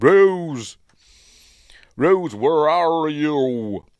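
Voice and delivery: very loud yelled bad American accent, "you" stretched. Describing a film scene, calling out as Sean does, in a bad American accent. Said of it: "his American accent's terrible, it's as bad as mine".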